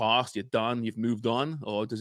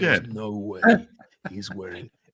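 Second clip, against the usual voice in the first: nature documentary narrator voice, louder; 4 dB louder than usual. Retelling a friend's commentary on a keepy-up video: David Attenborough voice. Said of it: "You sounded like David Attenborough there".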